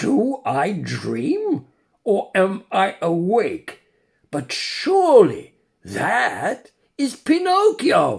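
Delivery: theatrical, dramatic exclamation, rising and swooping pitch. A puppet on stage points to someone in the pit, exclaiming dramatically. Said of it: "exclaimed in a dramatic tone".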